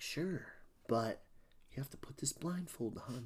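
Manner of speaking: breathy, airy, half-whispered voice. Retelling a scene where Jughead agrees to a blindfold: Kurtz impression. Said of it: "I do impressions of people all the time".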